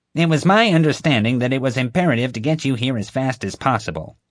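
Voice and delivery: justifying, self-defending tone. Reading a story aloud: a woman answering a shaken man's complaint, defensively. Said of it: "Marge said defensively".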